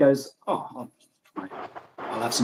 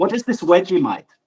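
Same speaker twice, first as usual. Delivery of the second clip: pitched-up put-on German accent; 6 semitones higher, 5 dB louder than usual. Retelling a man's question to Australians, in a clearly accented Germanic voice. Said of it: "clearly accented Germanic voice".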